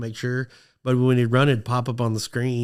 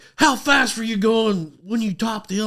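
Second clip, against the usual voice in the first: play-acted, furious, angry, demanding, pitched-up tone; 10 semitones higher than usual. Speaker retells what a furious man asked her, imitating a furious man. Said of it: "he is pissed, pissed".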